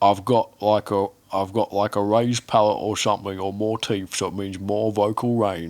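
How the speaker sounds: put-on British accent. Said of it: "in this British accent".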